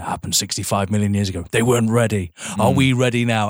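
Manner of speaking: very deep, low, growly man's narrator voice. Retelling how the film's opening narration sounds: deep growly man's voice. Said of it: "that deep, growly man's voice going".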